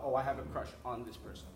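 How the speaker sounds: plain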